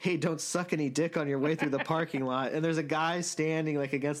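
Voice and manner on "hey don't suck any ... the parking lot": mock yell, called out lightly. Retelling a movie scene where a character yells after someone: imitating a yell.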